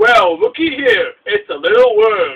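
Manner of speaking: loud, slow, swooping game boss voice. Showing how a boss in the N64 version sounded, Whizpig voice. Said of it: "That's my impression of Whizpig".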